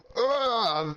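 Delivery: high, furious, really mad ugh. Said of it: "really mad".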